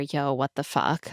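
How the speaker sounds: put-on whispered delivery. Retelling a show scene where he turns away: imitating a whisper. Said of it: "we hear him whisper".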